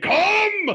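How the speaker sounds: high, loud scream. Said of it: "If you're not screaming".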